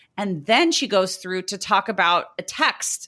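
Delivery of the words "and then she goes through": usual speaking voice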